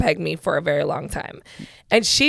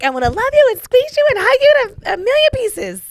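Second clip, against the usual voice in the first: very high, loud cartoon little-girl squeal; 6 dB louder than usual. Asking the other speaker about an old cartoon, doing the Animaniacs little blonde girl voice. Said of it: "she was like the little blonde girl".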